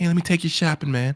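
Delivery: crazy voice with thick, heavy zest. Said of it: "said it with a crazy ass zesty voice".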